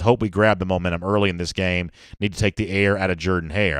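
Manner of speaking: normal talking voice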